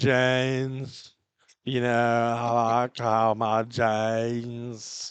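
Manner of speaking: very slow creaky fried drawl, "James" drawn out. Retelling how a comedy show mocked an ad: Sydney Sweeney vocal fry. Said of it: "making fun of the way Sydney Sweeney was using the vocal fry".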